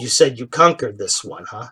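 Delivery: low, hushed, barely audible half-whisper under the breath. Storyteller voices a character muttering aside to another player, half-whispering under his breath. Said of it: "He whispers over to John Paul".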